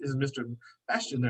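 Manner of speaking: very British put-on accent, laid on thick. Retelling a phone call from a woman calling from the Queen: put-on British accent. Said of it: "a very, you know, kingdom accent".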